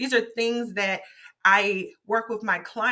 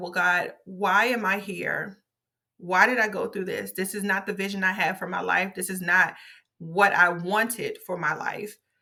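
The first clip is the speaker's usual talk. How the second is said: imitated tearful, crying voice. Retelling what was said to God while sitting on the sofa: retelling own past crying. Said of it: "I was crying and crying and crying".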